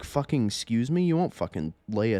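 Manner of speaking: acted angry voice. Retelling swearing at a guy who threatened them, retelling own angry retort. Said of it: "I was angry".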